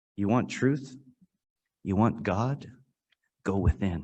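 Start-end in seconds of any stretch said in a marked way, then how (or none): none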